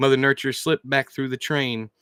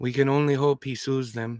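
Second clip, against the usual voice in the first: usual speaking voice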